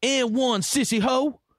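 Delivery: mock very high, stretched-out, drawn-out holler. Retelling a player's yell after scoring through traffic: imitating Zebo yelling. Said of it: "and he yells".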